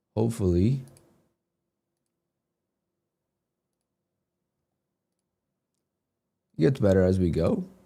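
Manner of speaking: hoarse, lost, nearly voiceless voice. Greeting viewers in the morning after waking with a sore throat: hoarse, lost voice. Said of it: "I lost my voice again".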